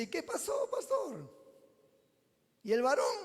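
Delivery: mock, jeering, ribbing, swooping taunt. A pastor retells what a man said to him at the table, retelling a mocking question. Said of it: "en un tono burlón".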